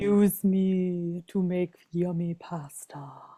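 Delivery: very slow put-on male voice, "me" stretched out. Voicing talking wood that offers to make pasta: put-on male voice. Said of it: "why are we putting on the male voice?".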